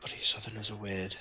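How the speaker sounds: fast, muttered grumbling mumble under the breath. Game narrator voicing a character as he wanders on, mumbling quietly under his breath. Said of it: "quietly mumble under his breath".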